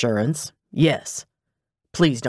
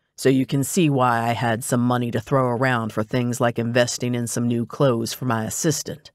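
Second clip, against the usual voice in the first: ordinary delivery, nothing marked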